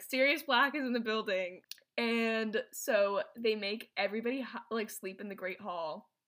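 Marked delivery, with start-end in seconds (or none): none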